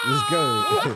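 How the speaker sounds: put-on outraged tone.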